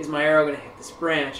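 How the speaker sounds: ordinary delivery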